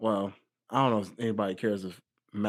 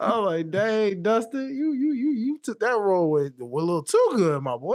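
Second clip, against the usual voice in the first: high, loud amazed praise. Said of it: "I was like".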